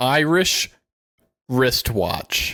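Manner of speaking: very slow, drawn-out, deliberate, word-by-word enunciation. Trading tongue twisters with another speaker, saying one super slow. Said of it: "I had to say that super slow".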